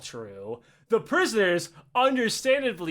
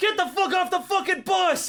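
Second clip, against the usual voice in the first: put-on, very high, furious, enraged yell; 12 semitones higher than usual. Retelling soldiers seizing a bus, imitating angry soldiers yelling. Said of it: "and they are pissed off".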